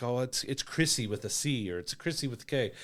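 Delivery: put-on Valley girl style chattering voice. Mocking a character's cringy dialogue in a Valley girl voice. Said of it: "He sounded like a girl that's like".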